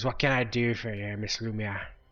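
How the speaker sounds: put-on gruff, trembly voice. Narrator voicing Vinor over a secure channel to Miss Lumia, gruff, trembly Vinor voice. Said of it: "It's a gruff, trembly voice, and he says".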